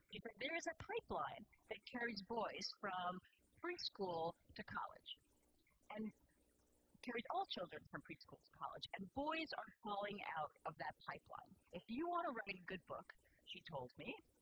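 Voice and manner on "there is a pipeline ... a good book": ordinary talk, nothing marked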